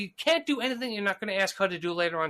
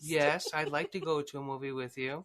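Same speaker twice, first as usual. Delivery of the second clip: wooden, sawdust-dry deadpan, flat, low and soft; 6 semitones lower, 6 dB quieter than usual. Retelling her reply when he asks her to a movie, mock deadpan delivery. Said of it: "deadpan, sawdust coming out of her mouth".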